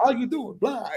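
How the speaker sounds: put-on vampire accent. Showing how a friend sounds when asked: Dracula accent imitating Abdi. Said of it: "a Dracula accent".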